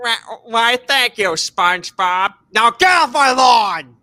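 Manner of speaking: cartoon-style old-man voice. Answering a chat comment by replying in character: Squidward voice. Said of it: "[name] laughs like Squidward".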